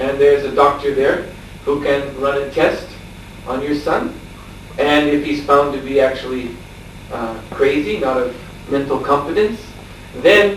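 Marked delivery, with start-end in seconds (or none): none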